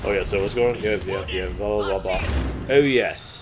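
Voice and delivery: ordinary talk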